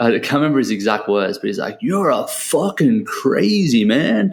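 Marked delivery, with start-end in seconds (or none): 1.8-4.3 big, very slow, butchered Southern drawl. Retelling what an old American guy on the golf course said, in a big Southern accent. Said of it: "in his big like southern sort of accent".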